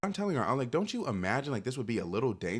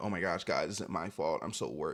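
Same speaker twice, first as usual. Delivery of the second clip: performative, fake anxious concern in influencer voice; 6 semitones lower than usual. Acting out how they would talk in a video: mock worried voice. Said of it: "that's how I'd be talking on the internet".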